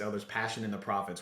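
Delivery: ordinary delivery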